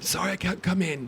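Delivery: fake sore-throat voice. Mocking how someone calls in sick to work, fake sore-throat voice. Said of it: "you always have a sore throat".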